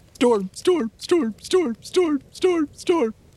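shrill, very high, dog-like barked word. A dog barking back and forth with a larger dog, barking dog voice. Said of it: "I bark".

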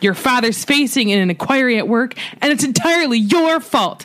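mild, reined-in, held-in yelling manner. Performing a parent's letter to a child, yelling. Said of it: "I like how you yelled the first line".

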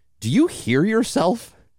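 mock very high, patronising, condescending talk-down tone. Reminding Tony of the advice he once gave, in a mock-condescending tone. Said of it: "the most condescending way to do that".

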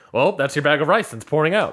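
usual speaking voice

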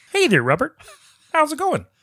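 high, loud squeal with swooping pitch. Greeting Robert on the podcast: Kermit the Frog voice. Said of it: "good, Kermit".

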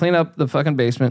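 ordinary talk, nothing marked

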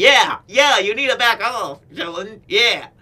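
high-pitched squeak. Retelling a wrestler backing up a teammate: high-pitched squeaky Dom impression. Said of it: "He's got that high-pitched squeak to his voice".

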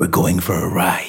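usual speaking voice

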